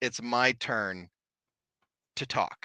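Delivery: clear, low, half-whispery spirit voice. Retelling a spirit's voice caught on a recorder, low and half-whispery. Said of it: "a voice that's low and whispery".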